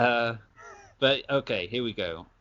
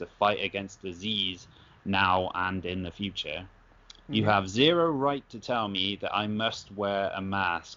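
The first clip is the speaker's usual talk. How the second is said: usual speaking voice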